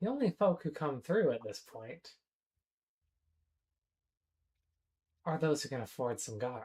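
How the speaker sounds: close, hushed, secretive half-whisper. Narrating a character who gets in close to speak, half-whispering. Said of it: "he gets in close and he whispers".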